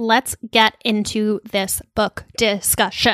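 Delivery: slow, deliberate, excited syllable-by-syllable announcer delivery. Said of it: "every syllable is its own thing voice".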